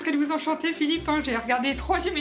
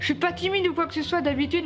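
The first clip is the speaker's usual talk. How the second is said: ordinary talk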